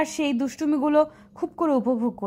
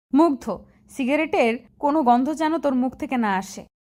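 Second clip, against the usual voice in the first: plain reading voice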